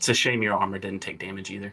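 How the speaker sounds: muttered, almost under the breath. As another character walks off, a player speaks in character, almost under breath. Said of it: "almost under my breath".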